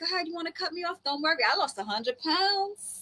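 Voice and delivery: breezy cheerful tone. Acting out a future self letting people cut ahead: acting out cheerful zero hate. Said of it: "Zero hate".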